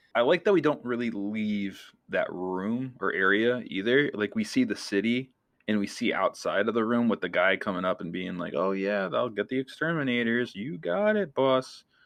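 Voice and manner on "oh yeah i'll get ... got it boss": mock, heavily sarcastic, fawning voice. Describing a film scene where a man answers his boss: mock-sarcastic reply. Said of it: "Like all sarcastic".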